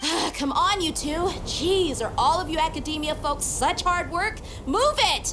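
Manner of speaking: exasperated shouting.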